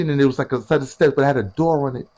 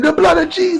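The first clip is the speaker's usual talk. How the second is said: put-on screaming, higher pitched; 13 semitones higher, 4 dB louder than usual. Retelling the mother screaming while they grab their pants: imitating a mother screaming. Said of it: "She's screaming".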